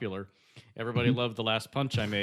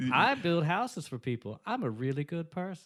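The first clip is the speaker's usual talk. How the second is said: high, pitched-up Southern drawl; 5 semitones higher than usual. Doing a Jimmy Carter impression that drifts from Bill Clinton: Jimmy Carter voice. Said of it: "it's very close to my Jimmy Carter".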